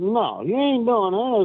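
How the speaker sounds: high-pitched hollering. Retelling yelling at people throwing rocks at the horses: retelling own hollering. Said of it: "started hollering at 'em".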